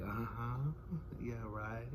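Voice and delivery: put-on seductive soft voice. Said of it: "talking real soft and trying to talk all seductive and sexy".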